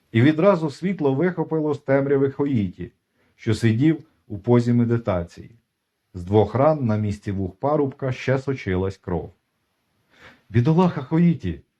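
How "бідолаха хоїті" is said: high, scared exclamation. The abbot finds the wounded young man in the dark, a frightened exclamation. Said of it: "вигукнув переляканий настоятель".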